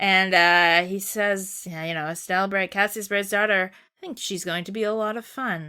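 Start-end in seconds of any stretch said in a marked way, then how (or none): 1.7-5.7 mock veiled, sinister, menacing, ominous voice. Retelling a character's line while recapping a scene: imitating menacing Weissman. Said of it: "So menacing".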